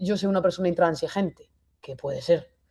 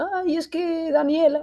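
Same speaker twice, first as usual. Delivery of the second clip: very high, slow, weepy child's voice, acted out; 10 semitones higher than usual. Acting out a daughter who comes over crying: imitating a crying daughter. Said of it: "viene mi hija llorando".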